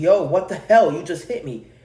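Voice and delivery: loud, play-acted angry, pissed-off outburst. Retelling confronting the driver who hit them, retelling an angry outburst. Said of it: "I kind of like all pissed off".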